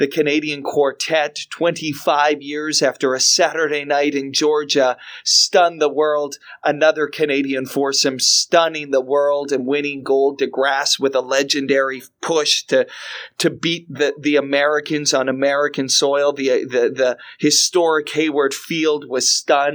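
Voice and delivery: ordinary talk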